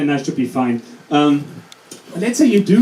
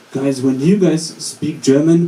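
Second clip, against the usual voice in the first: slow put-on British voice. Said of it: "he passed us and was like".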